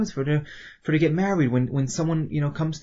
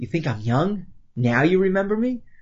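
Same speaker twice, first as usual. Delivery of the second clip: mock scornful, teasing, taunting tone. Explaining a text, voicing the woman's reply, retelling it in a mocking tone. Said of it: "almost in a mocking tone".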